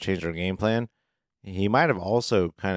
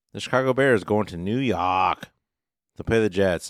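worst-ever, terrible put-on New York accent. Host moving on to preview the next game, in worst accent ever. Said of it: "That was the worst accent ever".

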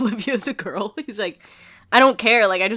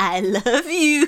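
creepy, eerie, scary voice, high pitch; 5 semitones higher than usual. Retelling her ex's line from her nightmare, in a scary voice. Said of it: "In this, like, scary voice".

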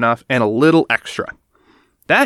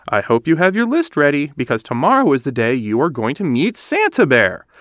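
plain

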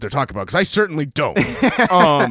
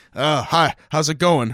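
caricatured put-on American accent, slower. Mimicking an actor who keeps getting cast as an American, caricature of an American accent. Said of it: "a caricature of an American accent".

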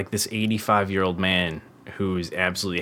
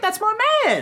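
higher, excited, comedic put-on voice; 4 dB louder than usual. Imagining meeting a favourite actor, in a Chris Tucker voice. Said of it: "I just basically did that voice".

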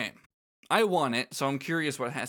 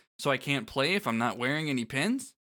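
normal talking voice

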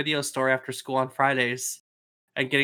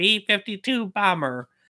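mocking, put-on obnoxious voice, much higher; 7 semitones higher, 3 dB louder than usual. Telling a family story, acting out what Dad kept repeating: imitating Dad's obnoxious voice. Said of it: "in his obnoxious voice going".

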